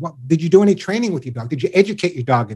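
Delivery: normal talking voice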